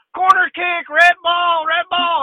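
put-on very high, stretched-out, drawn-out screaming. Retelling how he screamed at her during the game, imitating someone screaming. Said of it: "he's screaming at her".

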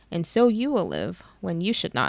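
ordinary delivery

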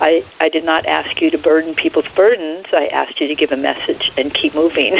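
ordinary talk

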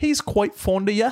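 high, mock British accent. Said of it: "that was a U K accent".

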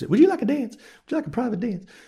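very high, put-on flirty come-on voice. Retelling what a woman said to him in a booth, in a put-on voice. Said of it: "Put on a voice".

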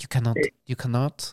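failed put-on French accent. Joking about how Monaco would respond, in a bad French accent. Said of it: "That's not a French accent".

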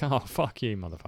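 breezy, light, teasing joking tone. Imagining how he could have said it, in a put-on light joking tone. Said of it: "He could have said it in a joking way".

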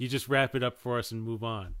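ordinary talk

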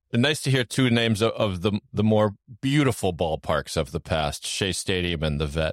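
sarcastic tone. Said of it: "I'm being sarcastic".

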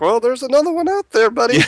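high, wide-swinging sarcasm.

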